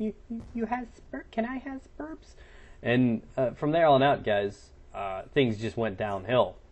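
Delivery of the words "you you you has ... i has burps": put-on small, soft, hushed babyish little-child voice. Retelling a conversation with a woman, the speaker puts on a little childish voice. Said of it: "I put on this little childish voice".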